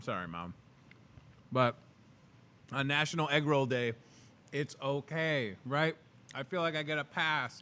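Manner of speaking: halting speech through a mouthful of food. Host eats egg rolls on the show for national egg roll day: talking with mouth full. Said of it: "talk with your mouth full".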